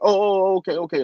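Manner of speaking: acted, high, over-eager, overexcited yammering. Retelling a taxi driver's reply to a ride request, imitating an overexcited man. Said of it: "Like he like was overly excited".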